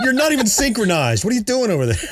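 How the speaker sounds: mock scolding, high-pitched.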